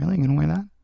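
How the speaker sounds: mumbling under the breath. Retelling what a character mutters while walking by: imitating someone mumbling. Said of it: "mumbling shit like".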